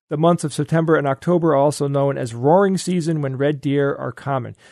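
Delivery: ordinary delivery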